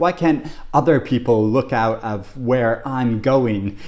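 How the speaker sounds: ordinary delivery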